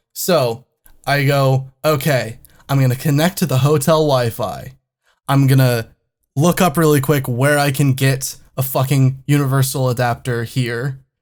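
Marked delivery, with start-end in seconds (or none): none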